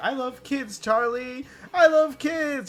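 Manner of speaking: put-on shout in a little character voice. Retelling an episode gag where Pym shouts at Charlie: imitating Pym shouting. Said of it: "he's literally shouting".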